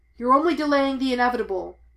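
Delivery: very loud bellowing shout. A Jedi Master, lightsaber raised, shouts at his foe; shouted. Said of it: "he shouted".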